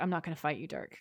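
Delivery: low, quiet, superior, condescending brush-off. Retelling a movie scene, the speaker voices Sam's reply to Dirk, mock-condescending and low-key. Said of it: "in this like "You're beneath me" kind of a way".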